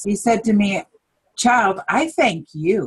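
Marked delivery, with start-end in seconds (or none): 1.4-2.9 put-on, loving, clear-toned voice. Retelling what was said to the speaker while driving, imitating a clear loving voice. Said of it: "in the most clearest and loving voice".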